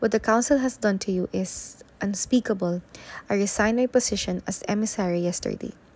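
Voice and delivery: ordinary delivery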